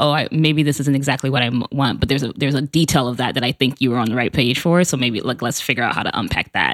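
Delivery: ordinary delivery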